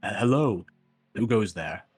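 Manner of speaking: deepest possible, slow voice, calling out. A player voices Oliver calling into a cave, in Oliver's deepest bellowing voice. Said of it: "the most bellowing voice he can".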